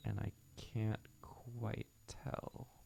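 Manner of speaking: slow, soft whisper.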